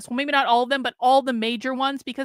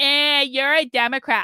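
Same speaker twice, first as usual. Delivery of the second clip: dopey, dim-witted, dumbed-down, dismissive tone. Speaker acts out how conservatives answer communists: imitating conservatives' tone. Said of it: "That's exactly the tone of voice they use".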